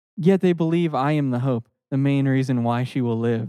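usual speaking voice

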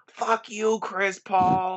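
put-on courtside heckling, drawn-out screaming. Telling Sam about someone screaming at Chris Paul the whole game, imitating someone screaming. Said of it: "He's screaming the whole game".

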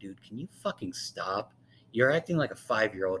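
ordinary talk

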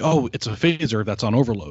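ordinary talk

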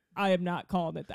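play-acted dry, flat, expressionless deadpan. Retelling their own earlier reply, retelling a stone-faced reply. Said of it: "I could not have got more stone faced".

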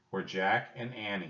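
ordinary delivery

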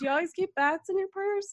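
very high voice broken by laughter. Retelling a clerk's question about bats in a purse: imitating someone laughing while talking. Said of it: "she's laughing".

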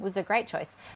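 dry sarcastic tone with an edge. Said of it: "Is that sarcastic?".

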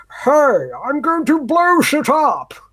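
over-the-top proper English, very high, loud and swooping. Describing a parody of Tom Hardy's Bane; over-the-top proper English Bane voice. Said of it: "that proper English, like, over-the-top voice".

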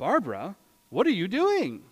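baffled, fed-up, exasperated tone with swooping pitch. Retelling own question to someone rebuilding a broken glass: retelling a confused, exasperated question. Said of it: "rather confused and exasperated".

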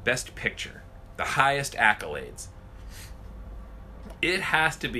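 ordinary talk

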